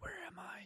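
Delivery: dazed, lost, disoriented whisper. Retelling a show's opening scene where the character wakes in bed: imitating Brian Cox disoriented. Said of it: "he gets up and he's all disoriented".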